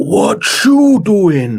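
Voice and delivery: put-on Puerto Rican accent, high and swooping. Retelling how a film villain talked: imitating a fake Puerto Rican accent. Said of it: "doing, like, an accent to make himself sound like he's from Puerto Rico".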